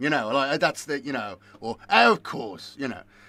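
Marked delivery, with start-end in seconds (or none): 1.9-2.8 half-done demon voice, high, loud and raised. Showing the inner voice in his head: quasi Palpatine voice. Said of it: "my quasi Palpatine voice".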